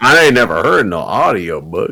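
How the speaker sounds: soft-spoken put-on heavy southern American accent. Retelling what a very southern man said, in a southern redneck accent. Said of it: "the most southern man ever".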